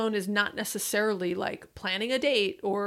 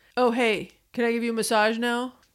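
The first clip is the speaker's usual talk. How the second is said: put-on dude-bro way of talking; 3 dB louder than usual. Mocking a lazy way to offer a partner a massage, in a put-on bro voice. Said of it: "this is my bro voice".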